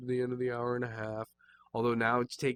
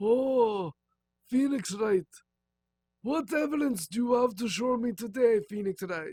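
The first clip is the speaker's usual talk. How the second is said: put-on old Italian man accent, very high-pitched; 11 semitones higher, 4 dB louder than usual. Trying out a voice for the judge character; old Italian man accent. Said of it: "An old Italian man".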